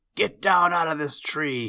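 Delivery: high, loud shouted yell. Narrating a story, Chatterer creeps up silently behind the little bears and opens his mouth, yelling. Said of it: "he yelled".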